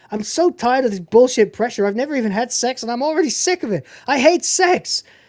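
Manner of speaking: high, exasperated, fed-up outburst, sounding like losing it. Retelling a movie scene where a character loses his temper: imitating Jim losing his temper. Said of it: "And then Jim loses it".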